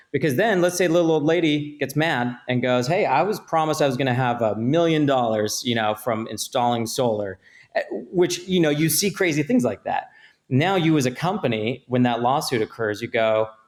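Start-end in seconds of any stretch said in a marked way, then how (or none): none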